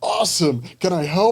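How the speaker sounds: high, loud, eager blurted burst.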